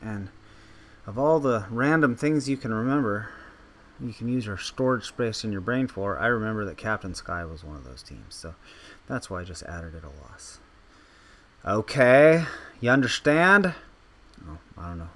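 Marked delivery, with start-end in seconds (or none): 11.6-13.7 very loud, high raised voice. Talking to people who can't talk back, in a raised voice. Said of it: "I'm raising my voice at people".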